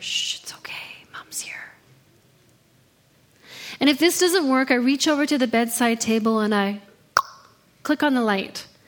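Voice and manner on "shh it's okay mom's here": whispering softly. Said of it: "I whisper in her ear".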